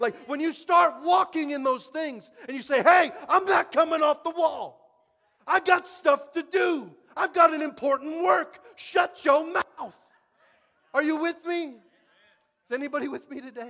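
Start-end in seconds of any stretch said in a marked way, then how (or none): 2.8-13.7 loud, high, pulpit preacher-style shouting. A pastor preaching to the listeners, shouting. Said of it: "I'm shouting a little much".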